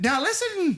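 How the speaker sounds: put-on stage Irish leprechaun brogue. Mocking a character whose accent is a shtick, imitating a leprechaun brogue. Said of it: "He's like".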